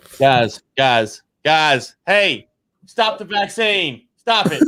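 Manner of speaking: slow, drawn-out, presidential-sounding voice. Joking about politicians reading their tweets: Donald Trump impression. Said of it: "a really spot-on Trump impression".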